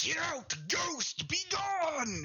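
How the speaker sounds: fearful, furious voice.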